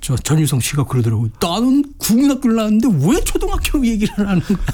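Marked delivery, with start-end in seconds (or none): 1.4-4.6 mock sudden, high, flaring, hot-tempered angry outburst. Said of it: "막 버럭 화를 내면서".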